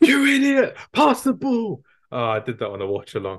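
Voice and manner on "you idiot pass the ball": very high, drawn-out shouting. Retelling yelling at a player during a match: imitating shouting at the screen. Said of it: "Shouting at screen".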